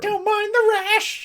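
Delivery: screeching, shrill fishwife voice, very high and very loud. Despite another speaker objecting to it, doing a fishwife voice. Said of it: "No fishwife voice".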